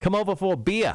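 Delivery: put-on South African accent. Telling about his friend Dale, the speaker imitates Dale's South African accent. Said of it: "That's what he sounds like".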